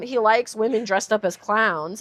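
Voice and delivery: plain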